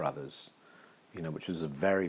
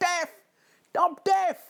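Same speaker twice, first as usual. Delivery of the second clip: put-on shrill, very loud, high Cockney accent; 11 dB louder than usual. Recounting a comedy sketch, speaker delivers the deaf man's line in a cockney accent. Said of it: "in a Cockney accent".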